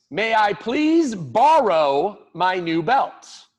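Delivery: polite, firm, strong, very slow and drawn out. Showing students how to ask a parent for the new belt: nice, strong voice. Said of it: "say in a nice, strong voice".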